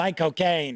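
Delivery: put-on London actor voice impression. Describing how people imitate an actor saying his name: Michael Caine impression. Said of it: "It does kind of sound like Michael Caine".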